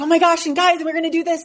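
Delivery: bursting, gushing enthusiasm. Describing getting excited while sharing an idea, retelling it: mock-excited raised voice. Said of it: "my voice would raise".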